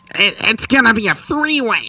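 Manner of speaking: very high, slow, obnoxious internet fan voice. Showing the other host an own version: obnoxious internet fan voice. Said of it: "That's my obnoxious fan voice".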